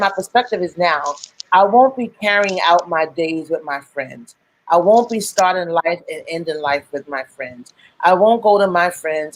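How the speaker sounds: usual speaking voice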